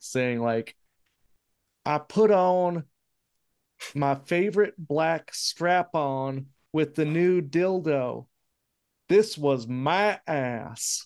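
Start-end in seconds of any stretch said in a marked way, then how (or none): 1.9-11.1 slow, high, drawn-out Southern drawl. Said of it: "this Southern drawl".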